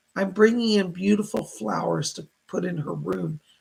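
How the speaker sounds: plain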